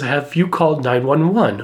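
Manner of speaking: ordinary talk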